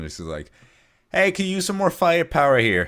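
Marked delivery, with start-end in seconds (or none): 1.1-2.9 very high, loud shout. Game master voices Dovey calling to the players as guards come; Dovey shouting across. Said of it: "shout over in your general direction".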